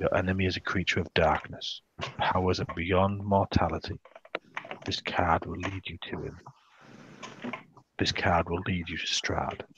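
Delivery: soft, hushed, quiet delivery. Narrating a woman revealing the last card in the centre, in a hushed tone. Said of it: "says this in a hushed tone".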